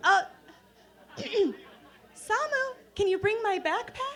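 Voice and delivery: put-on studied casual tone. Retelling asking for a backpack after an accident: imitating trying to sound composed. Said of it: "Trying to sound like I've got my shit together".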